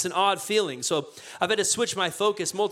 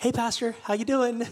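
mock sweet, acted-out tone; 3 semitones higher than usual. Retelling a cashier greeting the speaker at checkout, imitating a sweet greeting. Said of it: "she just sweetly says to me".

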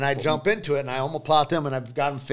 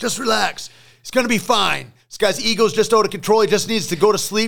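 big, booming, raised voice, reassuring in tone; 7 semitones higher, 5 dB louder than usual. Recounting Joe calming things down with a man, imitating Joe's big voice. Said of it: "in that way that Joe's got that big voice".

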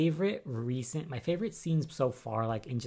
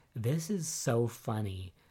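ordinary talk, nothing marked

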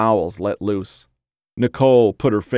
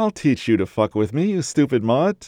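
sweet, honeyed, sugary sweet-talking tone; 4 semitones higher than usual. A woman speaks to her whining dog, sweetly. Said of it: "she said sweetly".

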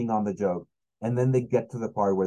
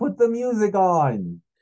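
high, loud put-on old man yell; 11 semitones higher, 5 dB louder than usual. Comedian recalls an old guy at the back yelling mid-joke, retelling the yell. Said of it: "just yells like".

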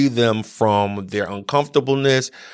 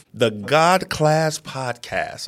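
slow, deliberate, each word carefully placed; 2 semitones higher than usual. Podcast host announcing the name of their show, said slowly. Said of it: "I said it slow".

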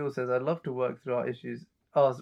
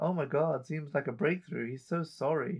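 acted-out sarcastic, unimpressed tone; 2 semitones higher than usual. Retelling a character's reply to an apology: imitating sarcastic remark. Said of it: "hits him with some sarcasm".

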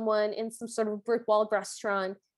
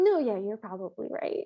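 imitated, mock-dismissive tone. Recapping a character's reply in the story, mock-dismissive. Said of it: "like in a very dismissive way".

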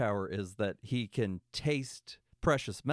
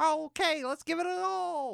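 fake little elf voice, very high and creaky. Retelling how a character spoke in front of Santa, in a put-on elf voice. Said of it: "Like he did this fucking elf voice".

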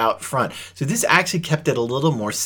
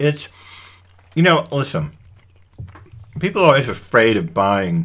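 speaking with mouth full of food; 3 dB louder than usual. Eating and talking about a shared recipe, talking with your mouth full. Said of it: "I'm talking with my mouth full".

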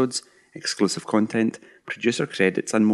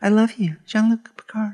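very high, put-on female American accent; 13 semitones higher, 4 dB louder than usual. Closing a Trek FM episode, a co-host puts on a random female American accent. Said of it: "It's my random female American accent".

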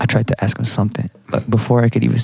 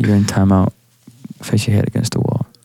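ordinary talk

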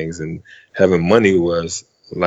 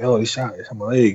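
play-acted pained cry, kept mild; 4 semitones higher than usual. Recounting a shooting where a friend got shot in the leg, retelling his scream. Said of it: "he started screaming like".

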